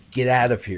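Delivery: ordinary talk, nothing marked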